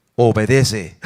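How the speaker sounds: deep, booming, thunderous voice. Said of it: "con voz de trueno".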